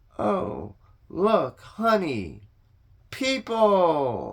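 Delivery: thrilled, sing-song, high and swooping. [name] addresses Martin as she spots people approaching: excited. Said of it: "sounding excited".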